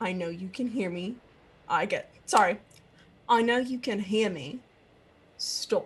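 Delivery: low, hushed half-whisper kept really quiet. Leaning in close to someone, half-whispering really low. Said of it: "she wants to lean in and whisper really low".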